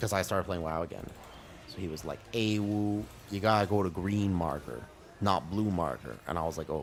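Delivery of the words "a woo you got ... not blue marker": put-on very thick, broad American Southern accent. Retelling what a man kept telling the speaker, thick southern accent. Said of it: "he had a very thick southern accent".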